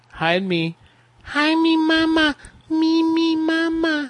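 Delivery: put-on taunting scared child voice, very high, slow, drawn out. Taunting someone on the phone by imitating a boy hiding behind mama: mocking a kid hiding behind mama. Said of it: "Is he hiding behind mama?".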